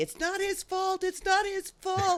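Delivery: acted-out very high-pitched, protesting scream. Retelling a reaction to a hospital scene on TV: imitating her own screaming. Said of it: "screaming at the T V".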